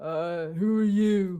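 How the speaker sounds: slow, lumbering, drawn-out orc creature voice. Voicing an orc who walks up and questions the party: orc voice. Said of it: "orc kind of, uh, walks up to you and goes".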